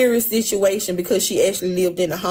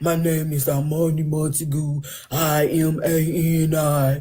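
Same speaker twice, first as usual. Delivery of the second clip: very heavy, weighty, deep, slow voice; 4 semitones lower than usual. Act out her getting on the stand and giving her name, in Armani Montague's very heavy voice. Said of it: "Her voice is so heavy".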